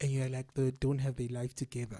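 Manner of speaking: normal talking voice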